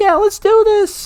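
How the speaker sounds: very high-pitched put-on voice. Quoting a teammate cheering the team up, in a high-pitched voice. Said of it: "like the high pitched voice".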